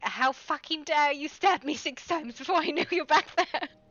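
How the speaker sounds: shrill screeching outburst at full blast. Retelling being stabbed in the shins from behind: imitating own screech. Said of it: "I was screeching at her".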